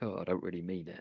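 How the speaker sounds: put-on voice, said with an audible grin. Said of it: "started kind of grinning and going".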